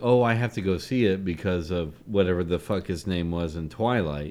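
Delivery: ordinary delivery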